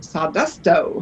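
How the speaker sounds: said with some attitude. Showing how the series name should be said: said with attitude. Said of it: "You have to say it with some attitude".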